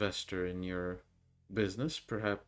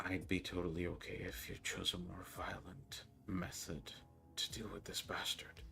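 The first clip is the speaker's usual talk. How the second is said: low, quiet, hushed voice; 8 dB quieter than usual. Narrator voices her line after a few moments of silence, hushed voice. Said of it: "in a bit of a hushed voice".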